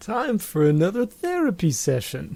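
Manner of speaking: high, swooping, chirpy therapist voice. Talking about therapy with co-hosts, announcing a session in a Sokka impression as a therapist. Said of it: "that was my Sokka doing a therapist impression".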